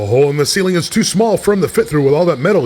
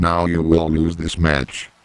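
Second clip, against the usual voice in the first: very low, sinister, menacing evil villain voice; 10 semitones lower, 4 dB quieter than usual. Threatening the others in the match: evil voice. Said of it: "I can sound evil".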